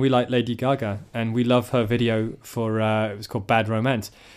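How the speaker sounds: plain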